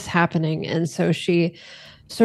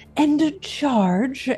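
put-on very proper, well-bred, old-money high yell; 7 semitones higher than usual. Voicing a character charging with a cavalry saber: very properly yelling. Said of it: "she just sort of very properly yells".

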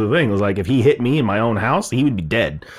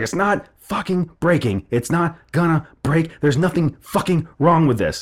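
high, enraged, furious screaming rant; 6 semitones higher than usual. Quoting a man smashing something with a hammer, retelling a scream. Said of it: "And like screaming".

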